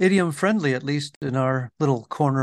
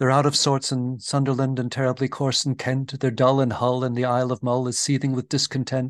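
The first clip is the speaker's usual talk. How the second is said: ordinary talk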